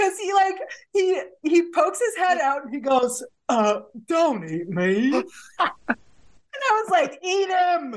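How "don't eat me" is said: put-on British accent in a deep, low voice. Recounting a talking skunk poking its head out: deep British accent skunk voice. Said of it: "it's got a deep British accent".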